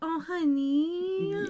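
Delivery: "honey" said kindly and stretched. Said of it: "she's not, like, mean about it. She's like".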